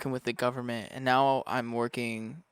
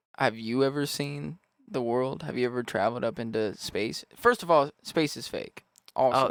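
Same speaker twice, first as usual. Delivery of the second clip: ordinary talk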